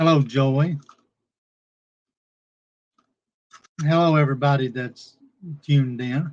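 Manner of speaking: talking while chewing, mouth full. Greeting everyone tuned in, the host talks with a mouth full of chips. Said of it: "I got my mouth full of chips".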